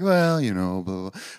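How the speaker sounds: soft-spoken man impression. Describing how Trevor answers when praised, imitating Trevor, soft-spoken. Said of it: "He's just so soft-spoken and like".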